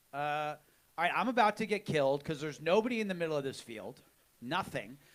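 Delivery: ordinary delivery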